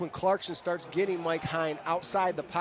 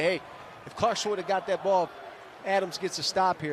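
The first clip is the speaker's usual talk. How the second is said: ordinary talk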